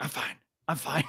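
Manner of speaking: whispered. Retelling what a player whispers when coming over, retelling a whisper. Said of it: "they whisper like".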